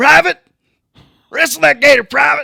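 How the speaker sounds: very loud, very high, shrill drill-sergeant yell. Joking about Florida basic training, ordering a private, drill sergeant voice. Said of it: "Is that your drill sergeant voice?".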